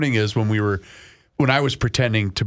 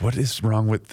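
normal talking voice

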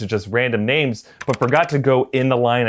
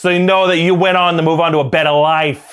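put-on Boston accent, higher and louder; 4 semitones higher, 5 dB louder than usual. Retelling an auditioning actor reading a line: imitating a Boston cop accent. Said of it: "his Boston cop accent".

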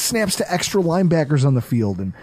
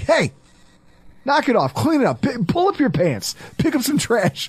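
raised, pitched-up, scolding voice; 7 semitones higher than usual. Reminding the listener of the time they yelled before a podcast: retelling a raised voice. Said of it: "only time I think you've ever really raised your voice to me".

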